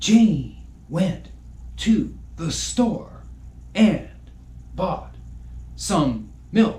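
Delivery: halting, with a pause after every word. Showing bad phrasing of a sentence, with Shatner-style pauses between words. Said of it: "that just sounds very William Shatner-esque".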